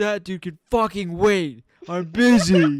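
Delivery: very loud, drawn-out top-of-the-lungs yelling. Retelling what Caden yelled at the gas station: imitating someone yelling. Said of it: "The top of his lungs".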